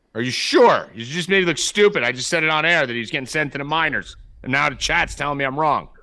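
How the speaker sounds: shouting. Scolding a caller on air so the others can hear: yelling at someone. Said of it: "So I'm gonna yell at him for you guys".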